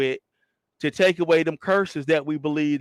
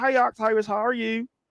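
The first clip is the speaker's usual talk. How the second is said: country woman voice, pitched up; 7 semitones higher than usual.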